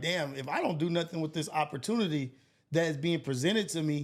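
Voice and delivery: ordinary talk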